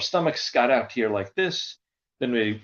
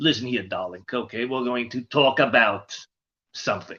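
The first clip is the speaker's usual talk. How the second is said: put-on, fussing character voice. Showing the voice taken from an aunt for a character: Roz voice. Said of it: "that was the voice I got".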